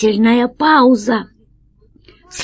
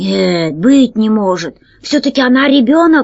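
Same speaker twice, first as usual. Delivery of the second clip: usual speaking voice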